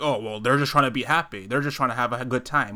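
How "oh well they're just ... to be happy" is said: plain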